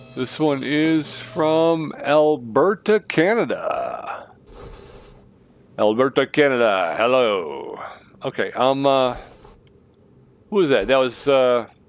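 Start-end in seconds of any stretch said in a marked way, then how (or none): 0.1-7.8 very slow voice, every word stretched out. Taking a call like a radio host, Larry King voice. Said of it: "Did I just do a Larry King impression?".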